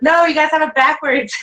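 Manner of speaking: acted, loud high-pitched shout. Retelling confronting marchers walking by: retelling a yell. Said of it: "yelled at him".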